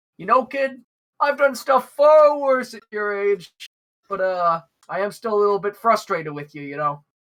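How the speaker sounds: amused speech laced with chuckles. Voicing a character replying to the kid, chuckling while talking. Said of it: "he starts chuckling and goes".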